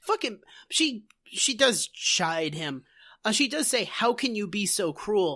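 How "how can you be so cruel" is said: ordinary talk, nothing marked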